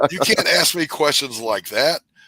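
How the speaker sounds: overloaded, high, loud exasperated rant.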